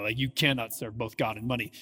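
low, daunting, ominous, foreboding tone. Showing how people read a scripture passage as a warning: daunting, ominous tone. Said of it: "read it with this like daunting piano tone".

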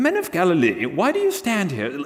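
put-on English accent with swooping, sing-song lilt. Voicing the two men from the Bible story, in an English accent. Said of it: "they had to have had an English accent".

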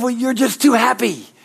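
mock yelling in a man's voice. Telling a story, retelling the words of a man who yelled at them. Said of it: "he's just yelling at me".

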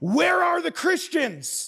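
very high, full-throated, top-of-the-lungs shriek. Retelling a sermon story of men bursting in: imitating a scream. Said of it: "they screamed at the top of their lungs".

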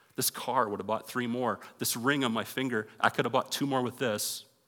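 ordinary talk

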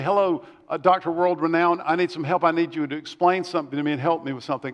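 usual speaking voice

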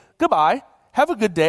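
put-on British accent. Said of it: "someone saying this in a British accent".

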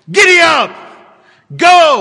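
loud, swooping drill-sergeant shout. The storyteller acts out someone shouting orders to the horses: imitating a military shout. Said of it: "It's a military shout to the horses".

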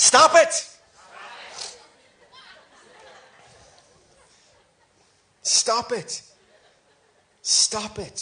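very slow, drawn-out Belfast accent. A speaker leads the audience in repeating a phrase: Belfast accent. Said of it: "in your best Belfast accent".

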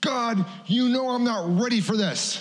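very high, slow, drawn-out, put-on scream. Pulled over by the road after leaving a parking lot, re-enacting: retelling screaming at God. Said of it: "I'm screaming at God".

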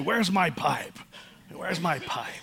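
play-acted, teasing, playful exasperation. Speaker and siblings jokingly repeat a family phrase whenever something is lost. mocking frustrated tone. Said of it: "marching frustrated through the house saying".

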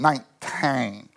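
mock girlish Southern twang

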